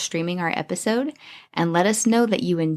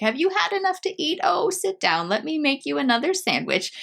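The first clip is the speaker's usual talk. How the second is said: put-on high, doting, fussing old grandma voice; 9 semitones higher than usual. Storyteller describing how grandmas talk, imitating an old grandma. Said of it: "she's an old grandma. You know how grandmas are".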